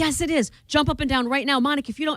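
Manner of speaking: frantic, panicked, high-pitched and urgent. Retelling what an ex said after sex without a condom: imitating a panicky ex. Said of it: "he panicked".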